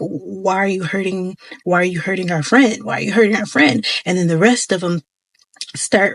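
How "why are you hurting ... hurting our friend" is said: put-on growling creature voice. Retelling a scene with little creatures, the speaker voices one, imitating a growl. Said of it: "he starts growling".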